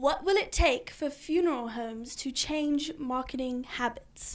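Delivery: put-on British accent. Second-time guest, challenged by the host, asks the question in best British accent. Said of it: "Ask your question in your best British accent".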